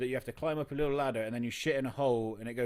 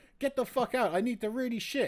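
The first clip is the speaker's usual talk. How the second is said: put-on child screaming, much higher; 12 semitones higher, 4 dB louder than usual. Retelling screaming at a locked door as a five-year-old; retelling screaming as a kid. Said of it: "I'm just screaming at it".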